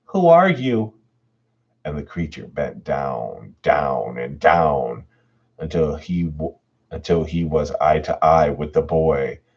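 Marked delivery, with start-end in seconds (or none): 0.1-0.9 fearful, very high voice, rising in fright. Narrator reads a boy's question to a creature, voice rising with fear. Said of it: "his voice rising pitch with fear".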